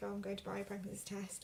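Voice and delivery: ordinary talk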